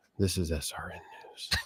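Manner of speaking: put-on gloomy, dejected, breathy, despondent newsreader voice. Imitating how the SRN News lady signed off: mock-despondent sign-off. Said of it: "Did you hear the despondency in her voice".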